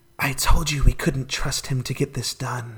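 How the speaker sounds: whispered, barely voiced, soft and hushed. Voicing one of three beings heard in a vision: whispering. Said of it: "they're whispering".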